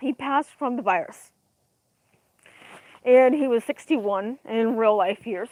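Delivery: voice breaking, choked up, holding back tears. Sharing the news that someone died, holding back tears. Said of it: "I'm really trying not to cry".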